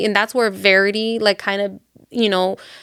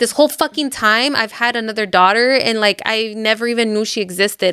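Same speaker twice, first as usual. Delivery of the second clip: usual speaking voice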